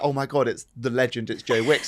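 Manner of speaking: normal talking voice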